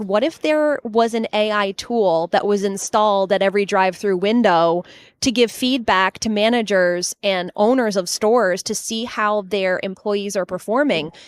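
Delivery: ordinary delivery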